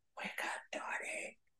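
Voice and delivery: soft, hushed, breathy whisper. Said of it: "by this whispering voice".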